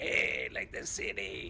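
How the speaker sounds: odd funny voice, whispered, breathy, very slow, drawn out. Telling others about Big Joe, imitating Big Joe's funny voice. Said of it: "he's got a very funny voice. He's like".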